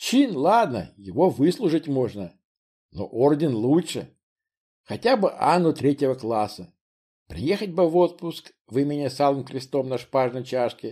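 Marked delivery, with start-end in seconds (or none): none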